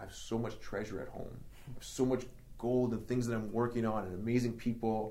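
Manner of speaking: ordinary delivery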